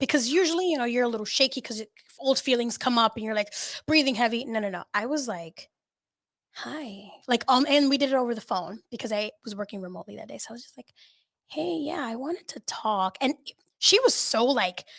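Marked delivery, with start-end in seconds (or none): 11.5-13.2 unnervingly calm, slow, even, unhurried tone. Retelling her side of a phone call, imitating her past self: retelling own calm voice. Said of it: "I was so calm that it was actually very scary".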